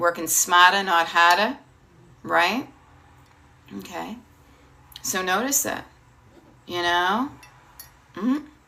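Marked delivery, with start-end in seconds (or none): 0.0-1.6 speaking with a Boston accent. Giving a kitchen tip as the speaker's own Boston accent comes out. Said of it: "here comes my Boston accent".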